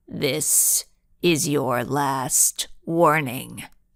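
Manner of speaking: very low, chilling growl. Narrator reading a voice from the tv warning the girls: growling voice. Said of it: "it growled".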